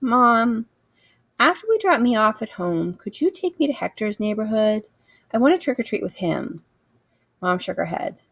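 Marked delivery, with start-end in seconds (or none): 0.0-6.6 sweetest, sugary, coaxing, put-on pleading voice. Speaker retells asking Mom for a ride to trick-or-treat, in sweetest voice. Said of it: "In my sweetest voice".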